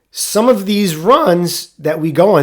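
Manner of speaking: slow, cracking voice breaking mid-phrase. Describing EMS runs in uptown Manhattan, voice cracking. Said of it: "did you hear my voice crack?".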